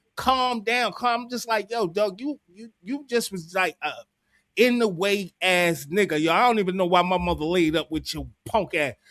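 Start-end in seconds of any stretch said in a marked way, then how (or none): none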